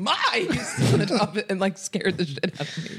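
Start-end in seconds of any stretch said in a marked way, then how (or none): 0.0-0.9 abrupt put-on yelling, blurted out without warning. Retelling a friend's bad impression that ended in a yell: imitating someone yelling.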